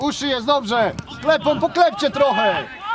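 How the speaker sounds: loud sideline coaching shout.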